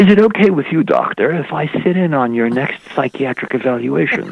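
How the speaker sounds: put-on very refined British accent. Retelling what a man in a lab coat said to the doctor; distinguished British accent. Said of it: "with his very distinguished British accent says".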